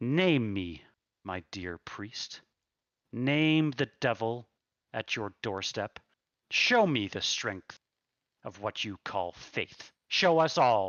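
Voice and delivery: elegant, soft but firm villain voice. Voicing a tall thin man taunting a priest: Strahd von Zarevich voice. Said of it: "Strahd von Zarevich stands there".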